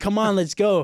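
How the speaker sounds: hollered, high yell. Retelling urging the captain down the ladder, imitating own yelling. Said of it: "trying to yell at him".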